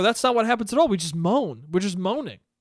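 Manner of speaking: ordinary delivery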